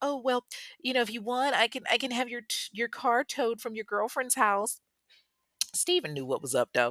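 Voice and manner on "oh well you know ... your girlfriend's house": high, solicitous, deeply and overly concerned voice. Retelling a caller's offer to tow a car: imitating a concerned man. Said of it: "Robert is just so concerned".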